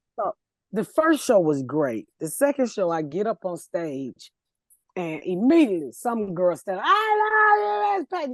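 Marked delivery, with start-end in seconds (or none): 6.8-8.4 put-on very high, tipsy drunk call-out, drawn-out "I". On stage at a show, retelling a girl calling out, imitating a drunk woman. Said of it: "just drunk".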